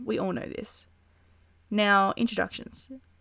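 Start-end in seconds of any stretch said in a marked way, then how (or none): none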